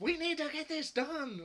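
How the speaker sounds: loud, very high, escalating shrill yell. Imitating the Security Chief as things go wrong: loud, high-pitched Security Chief voice. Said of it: "he gets louder and louder and more high-pitched".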